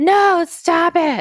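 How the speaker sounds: put-on yelling, pitched high. Retelling a scene where Julia stops them: imitating Julia yelling. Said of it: "She's just yelling at them".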